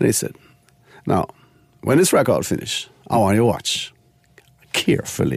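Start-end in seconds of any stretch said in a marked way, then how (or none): 1.0-5.4 smooth, silky, easy voice. Retelling the club boss teaching him at the turntables, in a smooth voice. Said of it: "a smooth voice".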